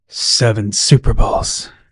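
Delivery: sultry, seductive, low and slow sexy voice. Speaker demonstrates saying a line in a low, sexy voice. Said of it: "In a low tone, sexy voice".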